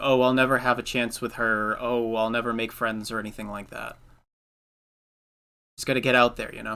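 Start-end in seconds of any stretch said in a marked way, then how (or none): none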